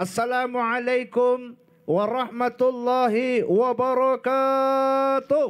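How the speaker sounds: energetic, high-pitched, spirited, full-throttle delivery. Showing how to open with the greeting at a dai festival contest, full of energy. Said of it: "langsung gas. ... itu kasih semangat memang".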